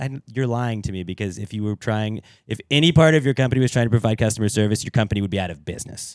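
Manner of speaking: ordinary talk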